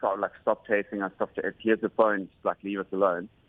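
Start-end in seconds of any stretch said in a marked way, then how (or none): none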